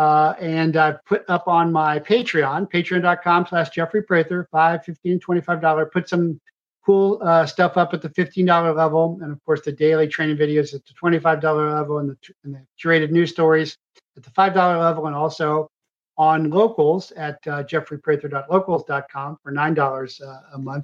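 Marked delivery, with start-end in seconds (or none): 9.2-12.6 words rattled off too fast. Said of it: "'cause I'm talking too fast".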